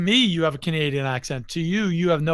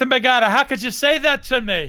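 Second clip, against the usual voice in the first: try-hard stage Irish accent, put-on, pitched up; 8 semitones higher than usual. After being told not to even try it, the speaker does an attempted Irish accent. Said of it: "don't even try the Irish accent".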